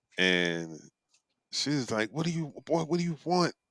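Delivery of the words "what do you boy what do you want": put-on, really fed-up mother voice, pitched up. Retelling what an annoyed mother said to a sick man: imitating an annoyed mother. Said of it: "she's really, really annoyed".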